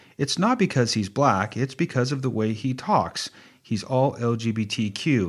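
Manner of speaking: plain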